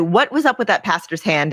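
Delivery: ordinary talk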